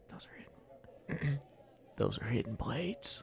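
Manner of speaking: very hushed, very quiet, secretive whisper. Playing a character walking up to the group, in a quiet whisper. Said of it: "in a quiet whisper".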